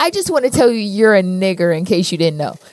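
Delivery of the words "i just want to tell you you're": usual speaking voice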